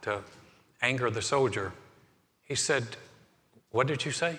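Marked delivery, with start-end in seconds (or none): 3.7-4.4 mock courteous, very gracious, gentle, kindly voice. Retelling a legend, a rabbi answers a soldier: very gracious voice. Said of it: "in a very gracious voice".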